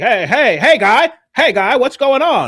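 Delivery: high, loud cartoon Canadian voice. Joking that a video looks like South Park: South Park Canadian voice. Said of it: "like a South Park video".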